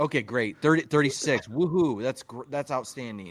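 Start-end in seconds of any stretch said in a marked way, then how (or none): 1.5-3.3 dripping sarcastic cheer meaning the opposite. Reacting to a recruiting ranking of thirty-six: sarcastic. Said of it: "sense my sarcasm".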